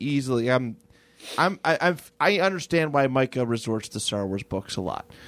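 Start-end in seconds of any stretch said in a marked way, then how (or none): none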